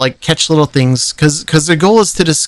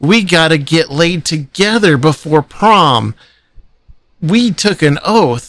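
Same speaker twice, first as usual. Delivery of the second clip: mock blubbering, very whiny, crying voice. Imitating an actor's American Pie character, who pleads with his friends: imitating a whiny crying plea. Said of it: "and he's crying about it".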